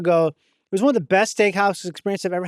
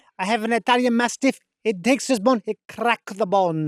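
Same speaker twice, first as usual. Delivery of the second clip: mock Italian accent, slower; 3 semitones higher than usual. Recalling a memorable restaurant waiter, imitating the Italian waiter's accent. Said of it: "Just talking about his dog".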